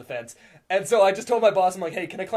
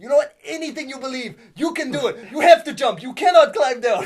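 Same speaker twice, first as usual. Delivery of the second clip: put-on Russian accent, loud and high; 7 semitones higher, 6 dB louder than usual. Retelling a man's long pep talk urging a jump: imitating a Russian accent. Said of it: "that's how the Russians spoke".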